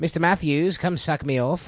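put-on old-time Boston upper-class speech. Friends trying out an old Boston Brahmin accent: Mr. Feeney voice. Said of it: "Mr. Feeney, like that".

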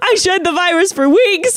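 very high crying, sobbing scream. Recalling being sick, acting out their past self retelling own screaming and crying. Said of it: "And I was literally like screaming, crying".

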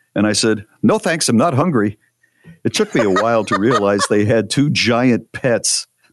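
normal talking voice

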